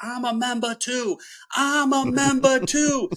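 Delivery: very high-pitched, shrill, repeated shrieking scream. Retelling how she stood out front one day, imitating someone screaming. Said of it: "she's just screaming".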